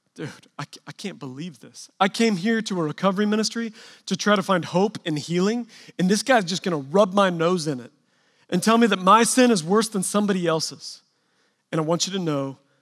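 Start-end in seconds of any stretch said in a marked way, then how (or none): none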